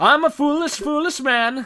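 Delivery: put-on Swedish accent. Talking while playing a game, dropping into an insensitive put-on swedish accent. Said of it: "I said that in like a Swedish voice".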